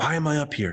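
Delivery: mock whispery voice. Retelling a student's question after the hypnosis show, imitating a whispery voice. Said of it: "she's like whispery kind of".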